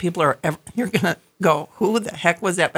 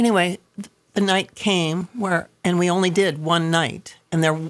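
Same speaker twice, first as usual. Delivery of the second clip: ordinary talk, nothing marked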